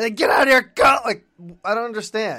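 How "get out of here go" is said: very loud, high-pitched, urgent yell. Retelling how a film character yells at her to leave: imitating someone yelling. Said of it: "He yells at her to hurry back".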